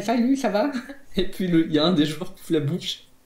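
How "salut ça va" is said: exaggerated high nasal voice with a lisp. Describing a character's voice in a game: nasal, lisping caricature voice. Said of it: "un perso avec une voix nasillarde, avec un cheveu sur la langue".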